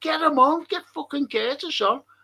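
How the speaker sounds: mock football fan, high-pitched yelling. Retelling a match watched at home: retelling screaming at the TV. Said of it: "I was screaming at the telly".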